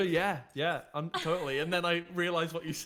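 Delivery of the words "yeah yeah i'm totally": usual speaking voice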